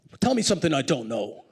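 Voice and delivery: put-on Bayonne, New Jersey accent. Retelling what Barney Frank said to his intern: Barney Frank's Bayonne, New Jersey accent. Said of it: "in a kind of Bayonne, New Jersey accent".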